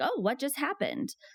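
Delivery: gently wondering surprise. Showing how to react when a child falls: curious surprise. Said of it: "kinda just sounds, like, curious".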